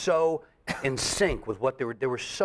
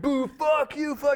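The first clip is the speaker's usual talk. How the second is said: mock very high, drawn-out, jeering screams; 13 semitones higher than usual. Retelling a heckling crowd at a show: imitating a crowd yelling and screaming. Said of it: "yelling and screaming".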